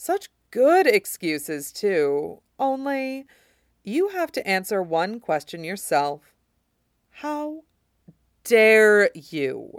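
slow, drawn-out, bitter tone. The oathbreaker speaks to the king: softly. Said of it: "and said softly".

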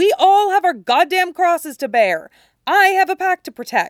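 loud, high-pitched, furious angry shout, temper snapping. A man finally loses his temper and shouts back mid-argument. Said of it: "Stiles shouts, finally losing his temper".

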